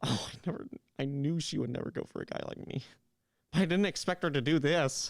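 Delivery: hurt, upset, emotional venting tone. A guy on a call with friends after she never showed up: emotional. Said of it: "I'm sorry for being emotional".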